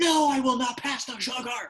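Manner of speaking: very high, sudden fury out of nowhere. Demonstrating a comedy bit the speaker loves, with sudden unprovoked rage. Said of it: "seemingly unprovoked rage".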